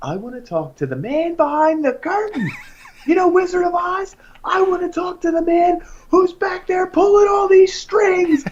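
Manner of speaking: mock very high, unhinged, rising loud outburst. Retelling how his mom confronted a man, imitating her losing her mind. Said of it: "she just lost her mind".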